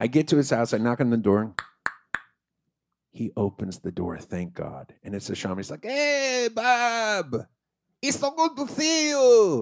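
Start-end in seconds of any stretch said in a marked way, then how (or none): 5.8-9.6 bad attempted Egyptian accent, very high, very slow. Hisham opens his door to Bob, who has knocked; do a bad Hisham impression, attempted Egyptian accent. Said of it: "He didn't sound anything like that at all".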